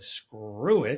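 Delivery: plain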